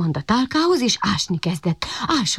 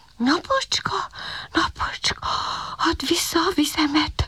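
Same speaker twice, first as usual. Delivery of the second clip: high-pitched whisper under the breath; 9 semitones higher than usual. Narrator reading a thirsty puppy's line to himself, whispering to himself. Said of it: "suttogta magában a kiskutya".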